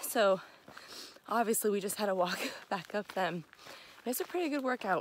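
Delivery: out of breath, winded. After walking back up the beach stairs, speaker tells viewers, out of breath. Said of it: "I was definitely out of breath, still kind of am".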